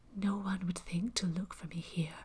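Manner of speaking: very low, tense, hushed near-whisper. Narrator reading a woman hiding behind the door, answering him in a very low voice. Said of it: "she said in a very low voice".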